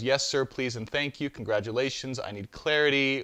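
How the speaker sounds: ordinary talk, nothing marked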